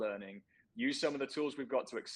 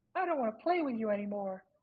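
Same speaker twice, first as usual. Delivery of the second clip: put-on cartoonish child voice; 11 semitones higher than usual. Joking that tech companies ditch the metaverse like a boy tossing a toy, in a Disney voice. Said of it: "That's my Disney voice".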